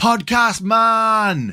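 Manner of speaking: put-on high, slow, Norwegian-accented shout. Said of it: "It was in a Norwegian accent".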